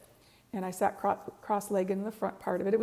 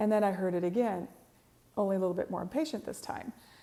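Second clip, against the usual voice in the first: ordinary talk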